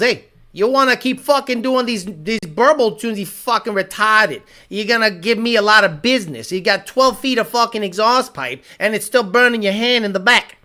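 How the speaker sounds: put-on thick New York, Northeast accent. Retelling what a car video guy said: imitating a heavy Northeast accent. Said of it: "he has a heavy, heavy Northeast accent".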